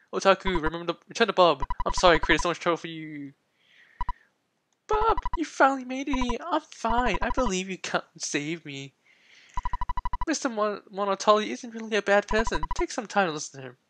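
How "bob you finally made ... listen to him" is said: bad put-on girl voice, higher, quieter. Voicing a girl character who speaks to Bob, in a terrible girl voice. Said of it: "That was a really terrible girl voice".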